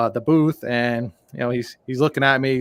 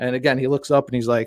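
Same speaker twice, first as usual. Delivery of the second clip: ordinary talk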